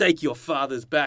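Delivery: very poor put-on New Zealand accent. Retelling a scene, the speaker voices Jake the Muss on the bridge: bad New Zealand accent. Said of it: "That's the worst New Zealand accent".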